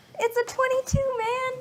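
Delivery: high-pitched, excited cheer.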